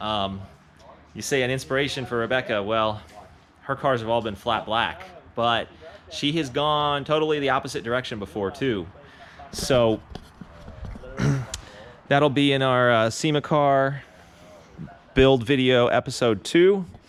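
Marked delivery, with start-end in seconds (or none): 1.1-2.6 fast, rushed talk, rattled off. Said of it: "I'm, like, talking kinda fast".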